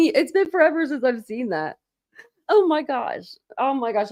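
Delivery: crying with laughter. Reacting to something very funny, laughing to tears. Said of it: "I really am crying".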